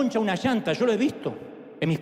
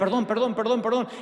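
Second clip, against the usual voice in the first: ordinary talk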